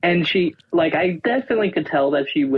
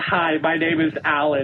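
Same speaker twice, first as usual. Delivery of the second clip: usual speaking voice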